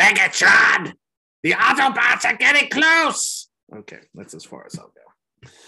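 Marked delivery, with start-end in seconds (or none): 0.0-3.5 put-on screeching character voice, very high and loud. Doing a Transformers impersonation, switching to a Starscream voice. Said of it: "I have to do Starscream".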